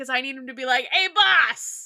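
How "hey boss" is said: put-on strong New York accent, higher and louder. Imagining a voice for the horse in the show: most New York voice. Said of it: "I want him to have the most New York voice".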